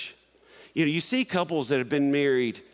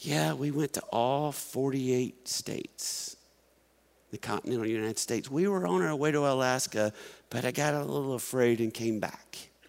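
mock quiet mutter under the breath, quieter; 4 dB quieter than usual. Retelling what a quiet uncle said at a funeral: imitating someone speaking under his breath. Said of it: "kind of says under his breath".

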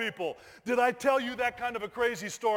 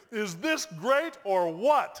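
plain

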